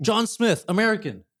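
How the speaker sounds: piercing, very high-pitched, loud shout. Guessing aloud where a fracture's name comes from: shouting. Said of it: "Why are you shouting".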